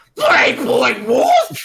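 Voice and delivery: very loud, swooping, sing-song put-on British accent. Repeating the phrase after an Australian version, now with a British accent. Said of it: "Here it is with a British accent".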